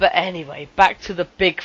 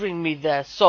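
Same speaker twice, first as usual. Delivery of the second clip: plain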